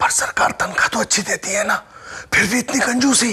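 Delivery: speaking quietly and softly. Complaining to a partner about being stingy, speaking quietly. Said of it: "तुम धीरे क्यों बोल रहे हो?".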